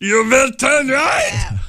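very high German sat-nav announcer voice. Chatting about GPS units in Germany, putting on the German GPS voice. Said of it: "You know the GPS voice in Germany".

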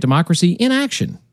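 emphasis shifted within "Democracy in Action".

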